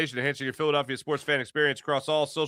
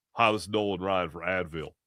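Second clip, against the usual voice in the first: put-on stuffy congested voice, lower and quieter; 8 semitones lower, 5 dB quieter than usual. Acting out an Advil ad: Nolan Ryan impression with a cold. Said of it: "My impression is Nolan Ryan with a cold".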